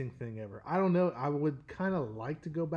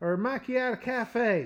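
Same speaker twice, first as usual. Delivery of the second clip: put-on goofy character voice, higher and louder; 8 semitones higher, 4 dB louder than usual. Retelling a drive-thru coffee order: put-on silly persona voice. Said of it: "I just flip a switch, and I turn into this".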